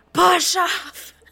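very high-pitched shout. Voicing Lenore calling an order to the rowers: shouting. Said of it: "you hear her just shout".

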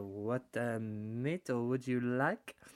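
slow, put-on French waiter accent. Retelling what a restaurant actor with a moustache said: imitating a French accent. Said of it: "a little French accent he put on for us".

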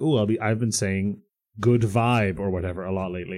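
normal talking voice

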